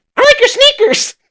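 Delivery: put-on squeaky, very high little old-lady voice. Retelling what a stranger said at the movies: imitating an old lady. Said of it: "this old lady goes".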